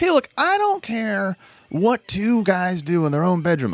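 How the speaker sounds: drawn-out, slow, high put-on Southern American drawl. Imitating guys who claim they don't care, put-on southern accent. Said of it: "I'm giving them a southern accent for some reason".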